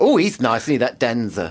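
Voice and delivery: lady character voice.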